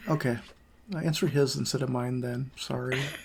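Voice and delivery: very quiet, barely audible, almost swallowed. Apologizing after answering the wrong question: very quiet. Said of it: "I said that so quietly".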